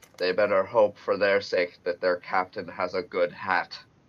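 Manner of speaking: offhand aside, said half to himself. Narrating the character Gub as an enemy ship approaches, muttering under his breath. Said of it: "says under his breath".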